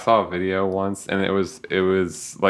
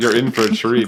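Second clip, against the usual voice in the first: plain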